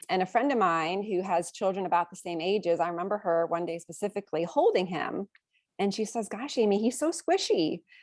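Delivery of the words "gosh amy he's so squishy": loving, motherly way of speaking. Retelling a friend holding the speaker's baby, imitating a loving, motherly tone. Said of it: "she said it in a very loving, motherly kind of way".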